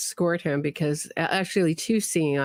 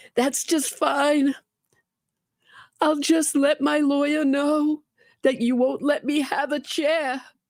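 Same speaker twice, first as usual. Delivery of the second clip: put-on voice, pitched very high; 10 semitones higher than usual. Quoting an inmate's words about not getting a chair, in the Donna voice. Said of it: "we got to do it in the Donna voice".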